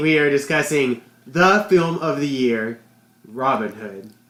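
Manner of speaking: ironic, tongue-in-cheek, sarcastic mock hype. Introducing the film discussed on this podcast episode: sarcastic praise. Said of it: "I say that sarcastically".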